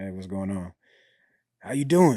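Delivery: acted flat, emotionless voice. Retelling answering a call, the speaker acts out his past self: retelling a dejected, flat greeting. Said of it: "Like completely dejected, no emotion".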